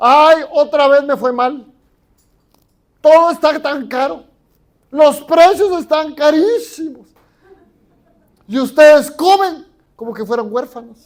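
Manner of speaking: very loud, high-pitched, whining complaining voice. Acting out a father complaining to his family, mimicking a complaining voice. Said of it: "Con voz de queja".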